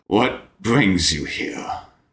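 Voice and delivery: whispered, hoarse, breathy creature rasp. Game master voicing an eyeless-skulled figure addressing the players, raspy voice. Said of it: "it rasps out".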